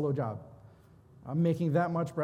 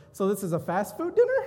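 mock amused, laughing, teasing ribbing; 4 semitones higher, 3 dB louder than usual. Husband quotes his wife reacting to the picture he chose, imitating his wife laughing. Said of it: "my wife laughed at me when she saw it".

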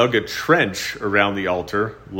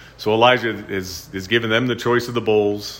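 ordinary delivery

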